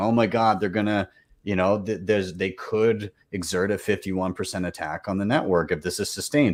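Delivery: plain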